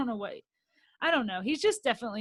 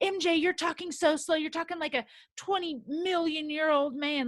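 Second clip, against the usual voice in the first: high-pitched, jabbing, taunting tone; 6 semitones higher than usual. Retelling a cast member jabbing M J: imitating Gigi jabbing someone. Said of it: "she was just jabbing M J for no reason".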